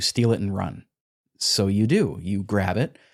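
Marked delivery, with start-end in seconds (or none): 0.0-0.8 put-on whispered voice. Recounting a story, the speaker acts out a voice speaking to the listener: retelling a whisper. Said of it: "whispers to you".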